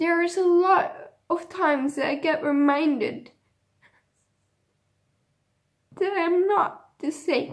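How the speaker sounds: speaking tearfully while crying. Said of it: "I'm crying now as well".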